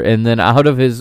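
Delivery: ordinary talk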